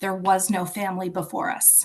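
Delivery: plain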